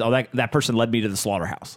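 normal talking voice

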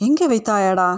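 plain reading voice

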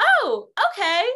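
high, loud, sarcastic and fed-up reply. Retelling how a coworker answered a customer's request, imitating Brandon's sarcasm. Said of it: "I knew that that was like a sarcastic tone".

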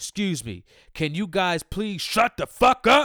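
very loud, blunt, rising harsh tone. Retelling how a guy in front turned around in the theater: imitating someone getting loud. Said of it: "He got loud".

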